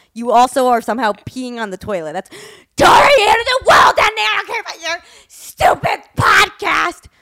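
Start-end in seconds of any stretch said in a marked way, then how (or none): 2.7-6.9 very high, shrill, loud yelling outburst. Retelling a fight with the mother: imitating mom yelling. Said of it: "when you yell".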